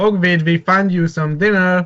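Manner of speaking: deliberate, pointed delivery. Standing in front of Jonah with axe and shield raised, said very loudly. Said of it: "I say very loudly".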